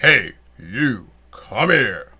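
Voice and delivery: big, very loud booming voice. Retelling a man calling him over as he walked off stage, in a big booming baritone voice. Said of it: "with that big booming baritone voice".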